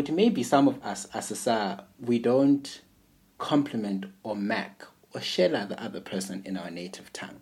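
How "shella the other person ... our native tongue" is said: ordinary talk, nothing marked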